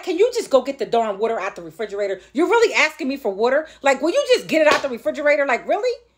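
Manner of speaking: irritated, exasperated, fed-up tone. A mother describing guests who ask her for water, acting out her own irritation. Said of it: "I get a little irritated".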